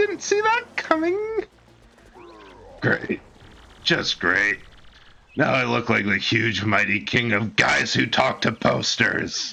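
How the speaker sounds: put-on character voice with wide, swooping pitch. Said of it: "the Bowser voice hurts my".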